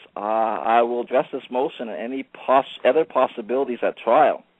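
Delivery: plain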